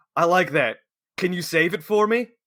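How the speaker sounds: put-on booming man's voice. Retelling what a very large man said to him, imitating a booming voice. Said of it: "his voice like blows back my hair".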